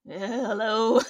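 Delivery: put-on groggy, half-asleep woman's voice. Retelling a woman's reply when woken from a drugged sleep, imitating groggy just-woken voice. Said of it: "being shaken out of a drug-induced sleep coma".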